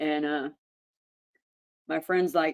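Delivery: ordinary talk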